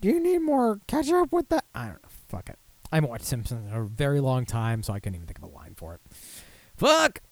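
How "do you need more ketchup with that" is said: put-on very high, squeaky, breaking teenage voice. Trying out a voice based on a Simpsons kid, squeaky cracking Simpsons kid voice. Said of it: "his voice is cracking".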